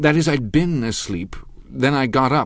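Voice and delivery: embarrassed, flustered voice. A narrator reads a man correcting himself after being asked about his exercises, flustered embarrassment. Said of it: "in a spasm of embarrassment".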